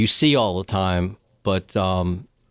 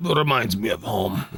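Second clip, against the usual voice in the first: put-on Russian accent. Playing a character after being asked to show the accent: russian accent. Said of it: "Neil does a great, uh, Russian accent".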